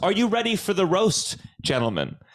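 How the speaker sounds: stately, royal manner. Recalling the start of a stand-up roast set: put-on regal voice. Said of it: "I really am putting on a regal voice".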